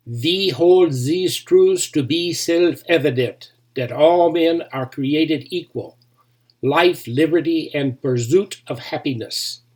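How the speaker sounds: put-on thick Russian accent, slow and deliberate. Retelling an old man's reply to an activist: heavy russian accent. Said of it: "with a heavy Russian accent".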